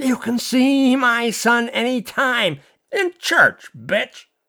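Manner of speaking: slow, drawn-out, high-pitched hissing voice. Reading a scene, a mother turns on another woman, hissing. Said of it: "Amelia Mahoney Coughlin hissed".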